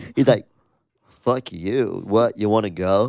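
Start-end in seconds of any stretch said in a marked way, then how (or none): 1.1-3.1 slow, measured, unhurried news-anchor voice. Retelling a parking-lot confrontation, doing the guy's newscaster voice. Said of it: "a dude who had like a very like newscaster voice".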